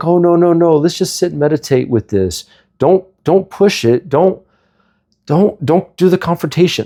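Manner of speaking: passive, calming, slow, high, meek placating voice. Imitating the spiritual community, called so passive: imitating passive people. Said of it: "they're so passive".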